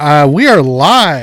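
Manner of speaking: very loud, booming classroom-teacher voice, drawn out. Host opening the podcast's first live show with his co-host: loud teacher voice. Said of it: "That was your teacher voice".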